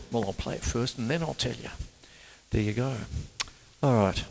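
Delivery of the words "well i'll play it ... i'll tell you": rough, rasping voice. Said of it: "in his raspy voice".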